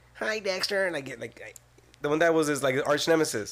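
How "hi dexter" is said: very high-pitched character voice. Imitating his counterpart greeting Dexter, in a very high-pitched voice. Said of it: "He had the very high-pitched voice".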